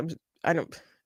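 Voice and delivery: soft, quiet, choked-up, faltering, emotional voice. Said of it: "I'm kinda getting emotional".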